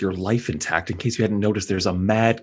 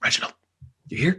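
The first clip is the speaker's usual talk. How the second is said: soft, high, hushed whisper; 8 semitones higher than usual. Calling quietly to an invisible companion while sneaking: whispering. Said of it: "I just whisper".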